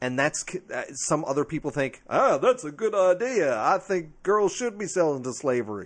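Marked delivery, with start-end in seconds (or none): 2.1-5.9 loud, sing-song, put-on American Southern accent. Imitating people who approve of a cruel idea: put-on Southern accent. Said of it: "I'm using a Southern accent for evil purposes".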